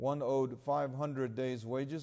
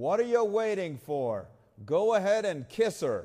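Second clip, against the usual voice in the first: booming, surly voice at full volume; 6 semitones higher, 8 dB louder than usual. Retelling a film scene, the speaker voices a man on a porch with a loud surly boom. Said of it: "a loud, surly voice booms".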